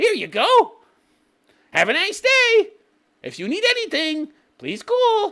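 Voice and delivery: very high, machine-like robotic service voice. Describing a restaurant robot that brings food, the speaker voices the robot: imitating a serving robot. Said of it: "And it brings you your food".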